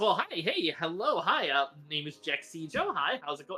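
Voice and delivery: upbeat, chirpy, swooping alien voice. Voicing an alien greeting the arriving crew: upbeat chirpy alien voice. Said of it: "upbeat, chirpy, uh, Duros".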